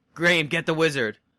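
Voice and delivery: screamed, urgent, hollered. Retelling what was screamed to a player in the fight: retelling a scream. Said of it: "'cause I screamed to you".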